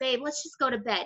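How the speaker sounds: ordinary talk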